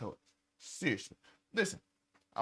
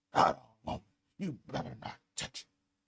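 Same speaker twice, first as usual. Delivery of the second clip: lower-pitched put-on angry wrestling boss voice; 4 semitones lower than usual. Acting out an angry cop refusing the toy: angry Vince McMahon voice. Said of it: "Sound like Vince McMahon back in the day".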